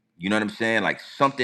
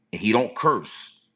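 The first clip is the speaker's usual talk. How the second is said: ordinary talk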